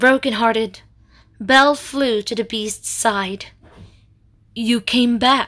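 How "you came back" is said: faint, weak voice. Reading a story aloud, the wounded Beast greets the returning heroine: speaking weakly. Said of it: "the Beast said weakly".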